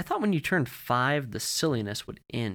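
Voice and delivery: ordinary delivery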